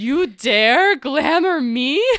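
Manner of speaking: intense, very loud delivery with hard stress. Rereading a character's line from the book after being told it reads more intense: intense, more emphasis. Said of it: "I'll put more emphasis".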